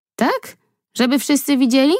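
wary, doubtful, suspicious voice. A daughter answers her mother's suggestion, asking suspiciously. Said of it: "Zapytała podejrzliwie".

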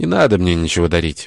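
ordinary delivery, nothing marked

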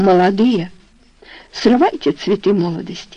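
ordinary delivery

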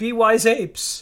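emphatic, high-pitched shout. A show host calls out to people watching the show, shouting at viewers. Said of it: "I'm shouting at people who are watching our show".

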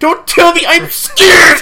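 high, frightened acted voice. Playing the other speaker's sister who fears podcasts, imitating a scared sister. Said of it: "'cause that's how your sister talks".

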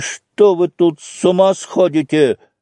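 venomous, hostile, spiteful, angry outburst. Alexei, breaking into the house, speaks to the old man at the window with malice. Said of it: "Алексей ему со злобой".

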